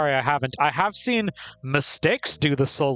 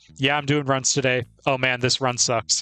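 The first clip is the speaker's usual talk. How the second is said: put-on offhand, low-key, undramatic casual delivery. Imitating speedrun streamers on stream: imitating an undramatic, casual tone. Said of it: "That's what they all sound like".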